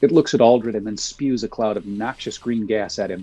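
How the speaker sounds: plain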